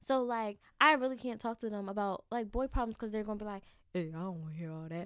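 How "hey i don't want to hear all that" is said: deep voice, dropped way down. Imitating a big brother's reply, voice dropped very low: very low, deep voice. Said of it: "y'all hear her voice drop like six octaves".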